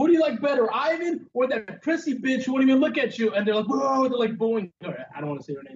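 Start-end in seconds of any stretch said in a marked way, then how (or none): 0.0-3.3 put-on, raised, pitched-up yell. Retelling yelling to fans as a performer walked by, acting out the shout. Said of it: "So I start yelling".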